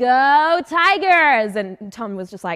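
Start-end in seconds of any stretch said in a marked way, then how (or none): 0.0-1.6 put-on American accent, much higher. Retelling standing up to deliver their line, American accent. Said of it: "I stood up in an American accent".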